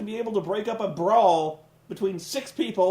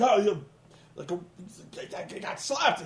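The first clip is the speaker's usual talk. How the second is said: acted-out angry, halting, stumbling outburst; 3 dB quieter than usual. Retelling how a wrestler reacted after getting slapped: imitating someone angry. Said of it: "he gets so mad".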